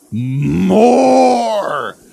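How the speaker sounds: high, loud monster bellowing.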